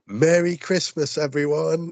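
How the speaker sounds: very high, acted-out, yelled holler. Retelling how a boy shouted while being hauled out of the main hall, imitating someone shouting. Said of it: "he just shouts".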